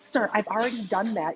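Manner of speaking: put-on annoyed, irritated tone. Retelling a call with a printer support agent: retelling own annoyed reply. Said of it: "I'm getting annoyed with the guy".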